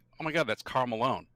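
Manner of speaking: ordinary talk, nothing marked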